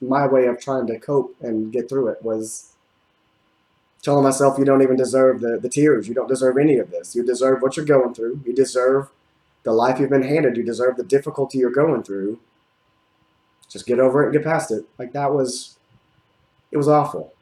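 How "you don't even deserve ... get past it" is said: usual speaking voice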